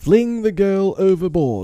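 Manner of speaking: very high, loud, shrill outcry. Hook gives his pirates an order, crying out. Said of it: "cried Hook".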